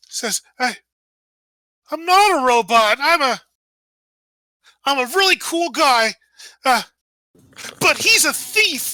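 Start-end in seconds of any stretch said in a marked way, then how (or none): 0.5-6.1 teary, sniffly, slow stammering voice. Narrating a character who sniffles and wipes his muzzle, sniffling and tearful. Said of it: "kind of like sniffles and like wipes his muzzle".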